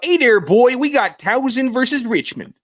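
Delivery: put-on Baltimore accent with very high voice. Asked by the host to do a Baltimore accent: Baltimore accent. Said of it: "can you do a Baltimore accent?".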